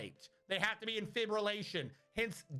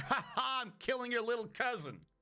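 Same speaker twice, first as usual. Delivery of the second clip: mock gloating, slower; 2 semitones higher than usual. Speaker voicing the alien he hates as it gloats, mock-gloating. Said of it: "you're just gloating".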